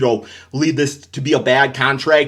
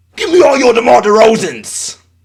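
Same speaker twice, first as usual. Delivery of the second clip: very high, very loud fan voice; 9 semitones higher, 6 dB louder than usual. Doing an impression of a Kings fan getting DeMar DeRozan: impression of a Kings fan. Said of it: "my impression of a Kings fan getting DeMar DeRozan".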